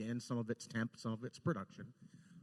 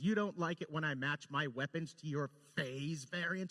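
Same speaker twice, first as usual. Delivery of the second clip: menacing, snarling voice with a taunting edge; 4 semitones higher than usual. Retelling a game scene where Janeway comes up, imitating Janeway's snarl. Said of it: "And she just snarls it".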